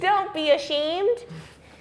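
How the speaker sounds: high, slow, mock comforting voice.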